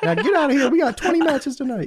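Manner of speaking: voice pushed very high. Acting out an announcer hiring a wrestler: Tony Khan voice. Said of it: "did the Tony Khan voice".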